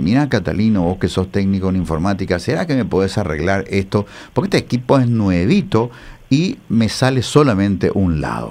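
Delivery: plain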